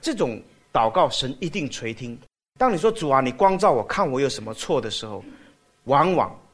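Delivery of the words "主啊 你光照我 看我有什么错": normal talking voice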